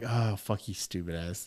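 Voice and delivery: acted laughing through words, very hushed, soft, slow. Retelling the moment the shrooms kicked in at dinner, acting out laughing while talking. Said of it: "And I'm laughing".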